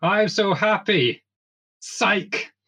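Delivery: very high, very slow, drawn-out seething furious voice. Retelling a character acting out rage at an audition: imitating acted rage. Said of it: "she acts out rage".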